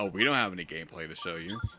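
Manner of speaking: dead-serious, unbothered deadpan, low and totally straight. Retelling how a presenter admitted there was no gameplay: imitating a deadpan remark. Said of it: "they literally just said it with a, with a straight face".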